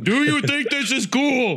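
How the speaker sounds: shrill, very high-pitched yelling shout. Acting out a scene as Optimus Prime speaking to Sam: acted yelling as Optimus Prime. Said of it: "'cause stop yelling".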